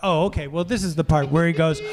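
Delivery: plain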